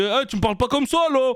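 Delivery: put-on high northern French accent. Acting out someone speaking to him, in a northern French accent. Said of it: "quelqu'un va me parler avec l'accent du Nord".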